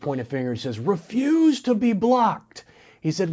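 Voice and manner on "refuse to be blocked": very slow, high, drawn-out yelled scream. Retell a coach addressing a player over the crowd in a huddle, imitating a coach screaming. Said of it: "he's screaming at him over the crowd".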